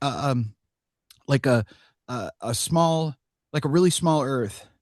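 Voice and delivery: faltering, halting, stumbling speech, stuck for words. Retelling her halting answer in a short interview clip: imitating stumbling speech. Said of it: "you hear her stumbling".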